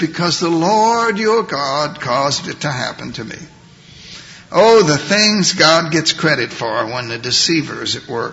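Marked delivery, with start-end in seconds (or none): 0.0-3.4 heavily put-on pious, spiritual, reverent voice. Retelling how Jacob answered Isaac's question, in Jacob's put-on spiritual voice. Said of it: "Jacob puts on his spiritual voice".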